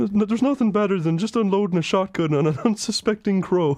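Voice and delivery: put-on countryside Irish accent. Retelling what a kid said about his article: imitating countryside irish accent. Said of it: "really like countryside Irish".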